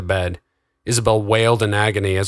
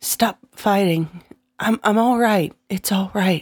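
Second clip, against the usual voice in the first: hoarse voice, much higher pitch; 11 semitones higher than usual. Isabel speaks up while the others are fighting, in a hoarse voice. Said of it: "came the hoarse sound of Isabel's voice".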